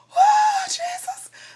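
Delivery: shocked outburst.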